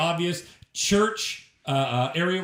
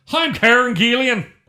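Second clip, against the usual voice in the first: put-on loud, high Irish accent. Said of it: "Say it with an Irish accent".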